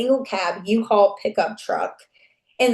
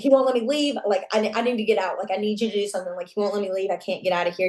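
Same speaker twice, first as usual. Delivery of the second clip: fussy, urgent, begging tone. Retelling a call for help while trapped in a room: imitating own fussy plea. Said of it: "I just had to be really fussy".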